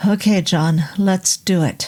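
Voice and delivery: ordinary delivery, nothing marked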